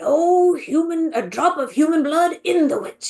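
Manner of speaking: lively, animated grandfatherly storyteller voice. Praising the american version's storyteller, the speaker imitates him: imitating animated grandpa storyteller. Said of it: "so much more like animated, and he feels like a grandpa".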